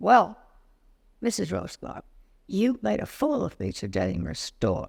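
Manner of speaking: rough, gruff put-on voice. Retelling a phone caller's words to her, in a gruff voice. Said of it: "with this gruff voice".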